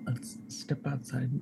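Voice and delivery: slow, quiet whisper. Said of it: "I'm gonna whisper to them".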